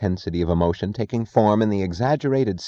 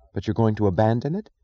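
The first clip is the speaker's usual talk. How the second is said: ordinary delivery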